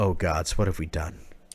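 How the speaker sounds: exclamation with slowly dawning dismay. Narrating a scene as game master, voicing Esme: voicing Esme in dismay. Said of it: "you hear Esme go".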